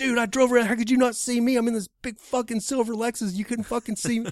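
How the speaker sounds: loud shrill screaming. Retelling a shouting match about not seeing each other, retelling a scream. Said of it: "He's like screaming at me and I'm screaming".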